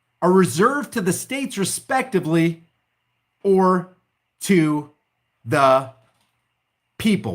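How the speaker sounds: slow, halting, broken-up reading, word by word. Reading the Tenth Amendment aloud to the audience, reading slowly. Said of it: "Why did I read that slow?".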